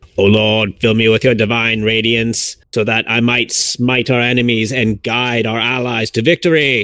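loud, mechanical, robot-like voice. A player speaks his character's prayer before casting a spell, in a robotic voice. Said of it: "He sounds like a robot".

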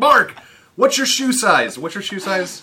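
very loud, shrill, high-pitched yell. Retelling calling out to someone at the Africa Savannah: retelling a yell. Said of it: "and I yelled at him".

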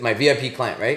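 normal talking voice

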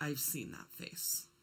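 mock stunned, near-whispered, hushed and breathy. Retelling what a boy said when the blood drained from his face, imitating a monotone voice. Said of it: "in this monotone voice".

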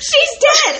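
very high-pitched, very loud shriek. Imagining your mom walking in on you, screaming like Deku. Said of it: "she screams like Deku when he finds Gran Torino".

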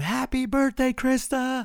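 shrill, very high, loud cheering scream. Retelling shouting to a runner as she passes: retelling a scream. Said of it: "I scream".

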